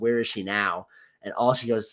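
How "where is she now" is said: normal talking voice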